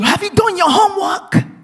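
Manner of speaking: loud, high yelling. Retelling a father yelling at his son: retelling a yell. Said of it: "I yell at you".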